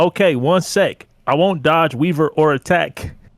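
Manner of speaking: ordinary delivery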